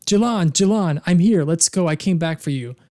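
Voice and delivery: screaming. Voicing a character who reaches a burning house's front door: screaming. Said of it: "she's screaming".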